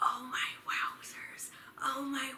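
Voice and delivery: very slow, thrilled, excited whisper. Retelling how she whispered in excitement while everyone was asleep, acting out her whisper. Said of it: "And I was whispering like".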